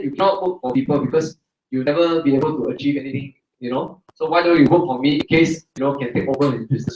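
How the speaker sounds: ordinary talk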